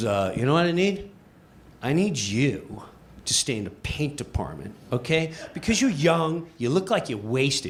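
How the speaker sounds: short-tempered, snippy, curt tone. Retelling how a new coworker replied, imitating a snippy coworker. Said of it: "he's snippy with me".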